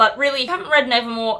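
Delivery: ordinary talk, nothing marked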